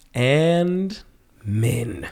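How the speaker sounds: sultry, suggestive, lusty delivery with drawn-out "and". Adding a two-word punchline to the other speaker's joke: lusty tone. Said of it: "That sounded so lusty".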